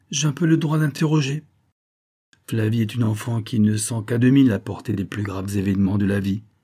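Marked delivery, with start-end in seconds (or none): 0.1-1.4 haughty, superior tone, much higher. A man answers another man's objection, in a haughty tone. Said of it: "répondit Victor d'un ton hautain".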